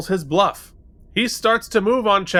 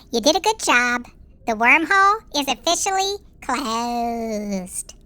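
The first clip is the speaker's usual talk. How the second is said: put-on babyish talking voice, higher pitched; 5 semitones higher than usual. Answering another speaker's request to do it in the baby voice: baby voice. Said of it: "do it in the baby voice".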